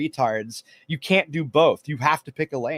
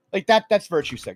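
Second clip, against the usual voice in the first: normal talking voice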